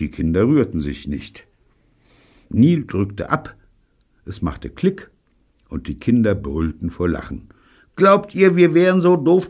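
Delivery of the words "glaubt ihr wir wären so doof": very high, crowing, jeering, taunting tone. David speaks to the laughing children after the gun clicks, crowing. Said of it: "krähte David".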